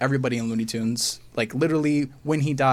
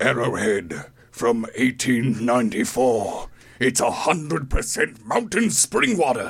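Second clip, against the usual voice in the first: as dramatic as possible, over-the-top delivery. Showing off voiceover by reading a water bottle, as dramatic as possible. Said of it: "I'm going to make this as dramatic as possible".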